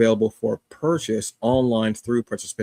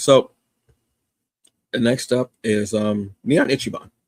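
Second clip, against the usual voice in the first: slow voice, breaking and cracking. Introducing the next digital comic on the list, voice cracking. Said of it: "I don't know why my voice cracked there".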